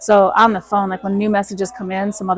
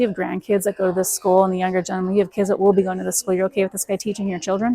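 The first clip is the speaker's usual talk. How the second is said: usual speaking voice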